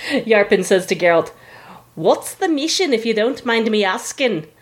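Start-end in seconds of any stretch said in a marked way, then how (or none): 2.0-4.4 put-on poorly done Scottish accent. Retelling a game scene, Yarpin asking Geralt a question, bad Scottish accent as Yarpin. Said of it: "a really bad Scottish impression".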